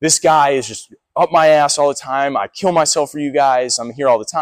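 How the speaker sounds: tearful, crying, sobbing complaint. Retelling a complaint at the gym, imitating own past crying. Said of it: "I'm crying my eyes out because I'm like".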